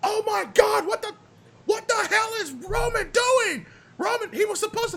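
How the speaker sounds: commentator-style announcer call, very high-pitched. Imagining a wrestling scene, the commentator reacts: imitating Michael Cole calling. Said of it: "Have Michael Cole".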